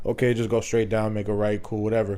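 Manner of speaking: normal talking voice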